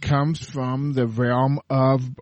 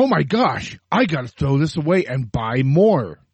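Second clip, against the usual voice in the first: ordinary delivery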